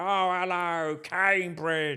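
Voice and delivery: very high, loud, booming, belted voice. Retelling a live disco gig, greeting the crowd: Zippy voice. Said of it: "by that time I was doing the voice".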